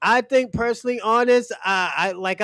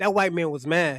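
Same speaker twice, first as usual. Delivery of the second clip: ordinary delivery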